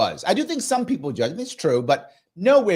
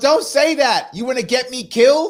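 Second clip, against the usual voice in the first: mock raised, high-pitched yell; 7 semitones higher, 5 dB louder than usual. Retelling a movie scene where he yells at her: imitating a yell. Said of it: "he yells at her".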